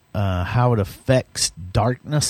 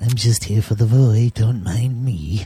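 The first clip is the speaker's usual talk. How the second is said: mock elderly politician voice. Joking about someone at a resort, in a Ronald Reagan voice. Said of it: "Mine sounds like Ronald Reagan a little bit".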